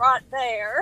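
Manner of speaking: put-on Southern accent. A parent imitates how their son says a phrase, in a southern accent. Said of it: "he says it with a southern accent".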